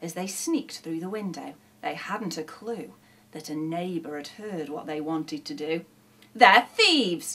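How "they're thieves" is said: cross, annoyed, raised voice. A neighbour who overheard the robber dogs speaks, cross. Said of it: "he said crossly".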